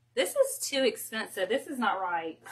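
ordinary delivery

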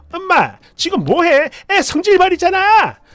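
high, slow, rising, irritated angry yell. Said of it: "소리치고 막 있는 대로 짜증을 내고".

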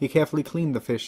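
ordinary delivery

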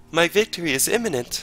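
put-on small high voice. Playing a card game, voicing the beaten villain: little Blood Prince voice. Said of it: "He talks like a little".

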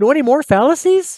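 breathless, eager, high-pitched. A girl puts a question to the narrator, asking breathlessly. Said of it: "She asked breathlessly".

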